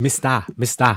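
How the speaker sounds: put-on mock Ugandan accent. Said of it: "Ugandan accent going".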